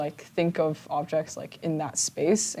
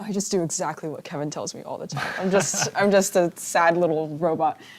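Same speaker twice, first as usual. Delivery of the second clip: ordinary talk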